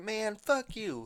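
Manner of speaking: mock screaming yell, very high-pitched. Quoting a line from a game, imitating Franklin screaming. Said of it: "screaming and shooting somebody and be like".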